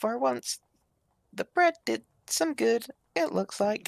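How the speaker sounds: high, hushed, in-character half-whisper. Playing a character half-whispering a remark to another character: half-whispering in character. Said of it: "I'll whisper to Yegov".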